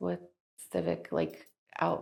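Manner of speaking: nervous, very deep-voiced, stumbling and hesitant. Reading out a question and clarifying it after admitting nerves, nervous. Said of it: "Sorry, I'm nervous".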